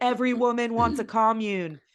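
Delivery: high, full-throated, acted-out yelled scream. Retelling shouting a line at the bar last night: imitating own screaming. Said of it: "I was just screaming at the bar last night".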